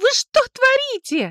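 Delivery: sudden, sharp outcry, very high pitch. A woman, just struck with a handbag by the narrator, crying out. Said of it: "вскрикивает она".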